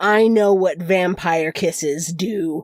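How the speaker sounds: put-on growling voice. Retelling how the werewolf man came over and answered her, retelling a growled reply. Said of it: "comes over and growls".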